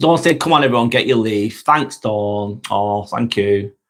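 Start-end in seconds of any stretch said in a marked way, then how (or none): none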